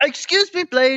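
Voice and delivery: high-pitched, puppet-like voice. Doing a puppet-like impression of Kenny addressing Blade: Kenny Muppet voice. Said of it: "please don't marionette Kenny anymore".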